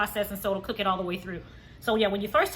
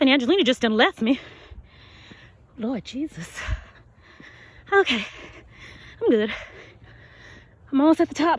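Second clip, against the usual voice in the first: breathless, raised chatter between pants, winded; 3 semitones higher, 5 dB louder than usual. Walking up an incline, the speaker keeps talking while out of breath. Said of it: "I'm so winded and out of breath".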